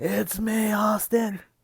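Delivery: high-pitched yelling. Saying the line after being asked to shout it: shouting the line. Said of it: "I was expecting you to shout".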